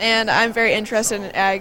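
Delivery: ordinary delivery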